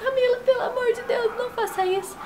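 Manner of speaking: high, sobbing, mock crying.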